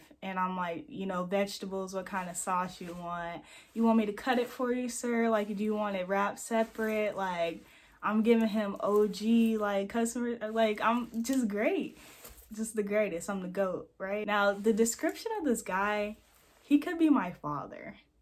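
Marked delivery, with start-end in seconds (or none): none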